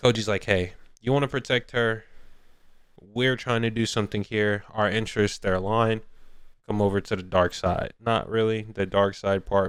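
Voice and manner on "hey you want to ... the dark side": ordinary delivery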